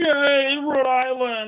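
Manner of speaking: put-on sarcastic cheering. Retelling how he cheered along with everybody, imitating a sarcastic cheer. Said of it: "All sarcastic".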